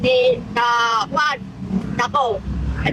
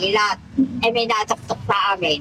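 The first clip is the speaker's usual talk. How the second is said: ordinary talk, nothing marked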